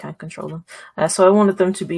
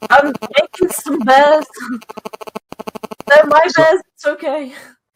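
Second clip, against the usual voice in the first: very high, loud, put-on character shout; 10 semitones higher, 6 dB louder than usual. Declaring a free action, shouting to others about conjured bears: in-character shout.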